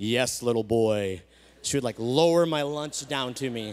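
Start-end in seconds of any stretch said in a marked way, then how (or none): 0.0-1.2 big, deep, low voice as if from above. Retelling how Sarah answered when fetching the speaker's lunch, Sarah's big voice from heaven. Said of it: "this big voice from heaven".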